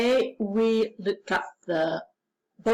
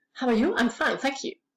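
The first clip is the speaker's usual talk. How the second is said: very fast, rapid-fire, rattled-off delivery; 3 semitones higher than usual. A teacher drills the class on a greeting, saying it even faster. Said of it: "Or even faster".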